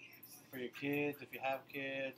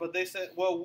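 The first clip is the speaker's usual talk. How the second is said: normal talking voice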